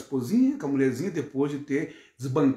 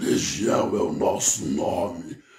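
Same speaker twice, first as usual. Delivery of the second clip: very low, deep chorus of many voices in unison; 9 semitones lower than usual. Speaker showing how someone performs a possession, in Legion voice of many voices. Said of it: "como se fosse a voz de muitas vozes".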